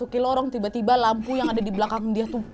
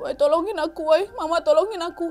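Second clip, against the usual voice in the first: acted tearful pleading, high and crying; 6 semitones higher than usual. Telling a possession story, the speaker acts out Yanti's plea: imitating Yanti crying for help. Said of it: "Dia menangis".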